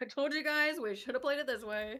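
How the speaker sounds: plain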